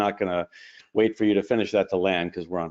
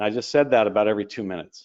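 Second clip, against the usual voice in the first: ordinary delivery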